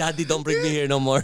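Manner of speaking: put-on dog voice with a Filipino accent. Voicing the high dog talking to its owner: Filipino accent. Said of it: "you bring out the accent like nothing".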